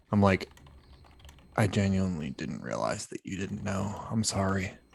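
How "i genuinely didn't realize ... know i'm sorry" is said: very hushed, apologetic half-whisper. Hugging another character and apologizing into their ear: half-whispering in character. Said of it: "whisper in their ear".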